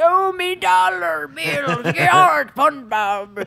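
high-pitched pirate voice, words drawn out long. Explaining why the greedy crab character is funny: Mr. Krabs impression. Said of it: "He's like".

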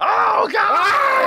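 mock very high-pitched wrestler's shriek. Imitating a wrestler punched by Vader: Ric Flair shrieking. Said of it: "Vader would punch him and he'd be like".

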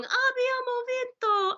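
put-on little child voice. Speaker retelling a film scene where the boy sees his mother, Joshua's little Italian voice. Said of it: "that little Italian voice".

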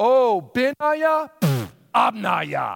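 mock slow sarcastic sing-song. Retelling John the Baptist's wordplay on Aramaic words: imitating John the Baptist being sarcastic. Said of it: "He's being a little sarcastic here".

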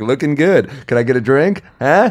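extra-friendly, overly friendly chatty tone. Retelling greeting people at an awkward moment: imitating own overly friendly greeting. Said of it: "I'll be overly friendly".

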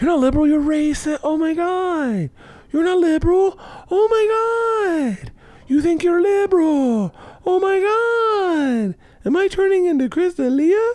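giggling, put-on impression voice.

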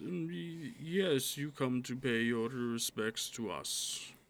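slow, posh, high-class gentlemanly speech. Narrator voicing an elf in a tavern addressing a newcomer, high-class gentleman style. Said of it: "high-class sort of style of speaking".

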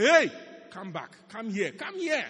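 very loud booming shout, rising in pitch. Retelling getting out of the car and calling someone over: imitating own past shout. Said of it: "as I got out of my car and I shouted".

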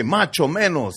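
ordinary talk

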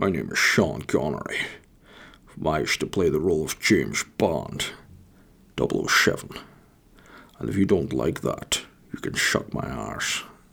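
soft, breathy voice. Trying it out for viewers to judge if it's decent: Sean Connery impression. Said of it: "I'll try now".

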